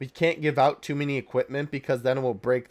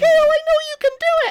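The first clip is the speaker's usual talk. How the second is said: belted out loudly, high and badly; 10 dB louder than usual. Acting out the scene before the Kefla fusion: awful Caulifla impression. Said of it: "that was an awful impression".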